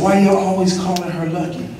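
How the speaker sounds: normal talking voice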